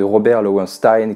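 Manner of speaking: switch into an English accent. Naming a childhood favorite while introducing a film trilogy: English accent. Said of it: "Vous avez vu l'accent anglais".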